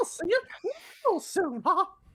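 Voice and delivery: very high, bouncy and quick. Asked by another player to do a quick Mickey Mouse voice. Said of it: "do your Mickey Mouse really quick".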